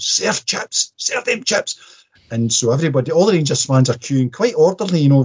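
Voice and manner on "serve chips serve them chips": mock demanding bark, screaming. Retelling a man at a chippy door yelling at the counter staff, retelling a man screaming. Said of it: "he's screaming at them".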